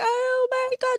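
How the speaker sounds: very high-pitched, tearful sobbing cry. Retelling a daughter's panicked phone call: imitating someone sobbing. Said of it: "she was sobbing".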